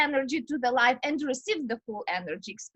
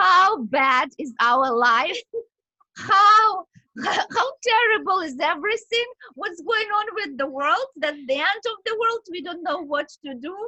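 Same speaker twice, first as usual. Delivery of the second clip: loud, overdone, play-acted tearful sobbing; 4 semitones higher, 7 dB louder than usual. Retelling crying on a patio with a friend: mock crying. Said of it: "we've been crying like this".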